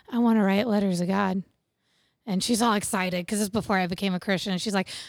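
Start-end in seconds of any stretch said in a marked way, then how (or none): 0.1-1.4 put-on, acted-out whisper. Recalling asking the house lady for an extra journal, the speaker repeats his reply: retelling a whisper. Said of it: "and I whispered it to her".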